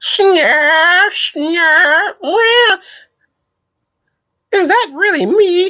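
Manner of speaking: very high, slow, drawn-out character voice. Doing a quick impression of a cartoon character: Snarf impression. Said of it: "That was my Snarf impression".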